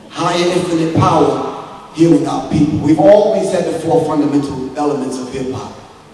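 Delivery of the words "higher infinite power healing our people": slow, deliberate, slowed-down delivery. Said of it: "I'm gonna say it again slow".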